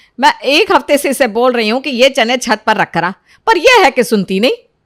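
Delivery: shouting voice. Mother answering her child, who asks why she is shouting at Sunita, yelling. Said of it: "अरे बेटा कैसे ना चिल्लाऊं".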